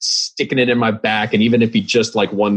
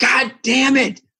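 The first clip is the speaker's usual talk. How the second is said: put-on very high-pitched, shrill, frustrated scream. Recalling a friend's reaction whenever he sinks a winning putt, imitating Keon's frustrated scream. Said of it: "he screams".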